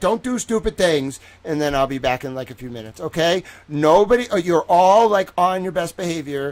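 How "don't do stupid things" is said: play-acted loud yelling at the top of the lungs. Acting out a helper yelling at the chat: imitating someone yelling. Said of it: "she just yells at you and she's like".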